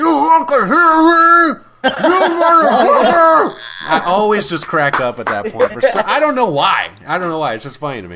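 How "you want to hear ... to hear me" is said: very high, very slow, drawn-out loud yell through a gag. Retelling a movie scene where Hoffman yells at the lawyer: imitating Hoffman yelling through a gag. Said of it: "he's got the gag in his mouth and he's yelling at the lawyer".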